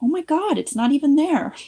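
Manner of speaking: high, loud amazed exclamation.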